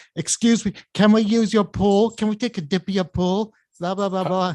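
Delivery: silly, put-on fake British accent. Retelling teenagers asking to use a pool, in fake British accent. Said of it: "they're putting on a fake British accent".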